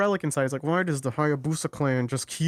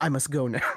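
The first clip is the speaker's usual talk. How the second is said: put-on edgy boy way of talking; 2 semitones lower than usual. Imitating the character leaving when approached by women: edgy Ryu voice. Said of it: "He always talks like that".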